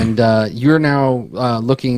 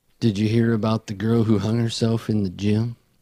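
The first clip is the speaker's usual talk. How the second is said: mock flat deadpan delivery; 5 dB quieter than usual. Quoting a line from the emo kid character, imitating her deadpan delivery. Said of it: "she is very deadpan all the time".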